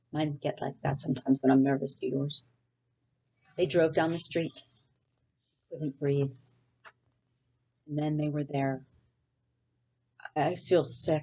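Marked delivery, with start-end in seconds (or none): 10.3-11.2 faint, weak, feeble voice. Narrator reads Sarah arriving at her new school, weakly. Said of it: "said Sarah weakly".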